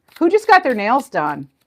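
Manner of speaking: sudden, blurted-out, loud, high yell. Card reader calling out to the audience during a reading, yelling. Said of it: "Sorry, I'm yelling".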